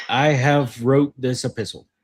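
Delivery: plain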